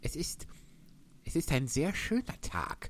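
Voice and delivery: soft, timid, shy, halting voice. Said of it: "sagte eine schüchterne Stimme".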